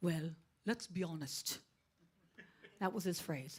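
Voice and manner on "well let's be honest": put-on strong, heavy Dutch accent. Quoting the speaker's father's favorite saying, heavy dutch accent. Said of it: "he'd say it in this heavy Dutch accent".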